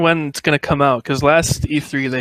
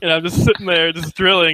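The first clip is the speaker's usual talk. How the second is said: ordinary talk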